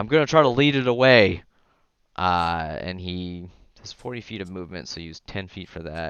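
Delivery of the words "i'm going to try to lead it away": high, loud, hollered yell in character voice. Voicing the Minotaur as it jumps away from the fight: Minotaur yelling.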